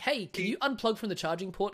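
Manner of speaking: put-on casual New Zealand accent. Acting out droids sharing a house, asking another to unplug: kiwi accent. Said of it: "they got the Kiwi accent".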